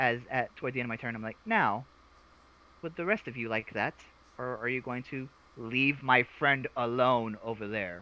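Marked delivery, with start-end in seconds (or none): 1.4-8.0 utterly calm voice, calmest imaginable. A player speaks in character to enemies at the end of their turn, very calm voice. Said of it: "he's like the calmest voice you've ever heard".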